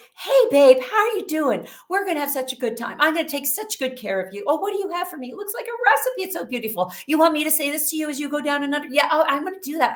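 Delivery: nonstop, fast, high, friendly chatty gush. Speaker retells how a frozen woman suddenly chatted to her friend, retelling chatty talk. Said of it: "from frozen to chatty Cathy".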